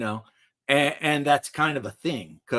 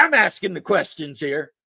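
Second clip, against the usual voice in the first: put-on Kentucky man's accent; 6 semitones higher, 5 dB louder than usual. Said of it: "when he does the Kentucky one".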